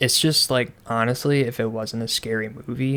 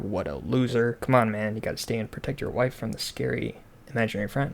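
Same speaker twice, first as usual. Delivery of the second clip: ordinary delivery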